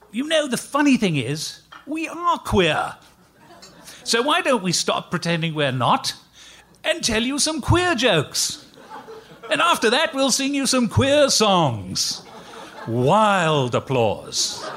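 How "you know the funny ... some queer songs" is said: put-on English accent, pitched up. Retelling how his partner addressed the audience, in his best english accent. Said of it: "he says in his best English accent".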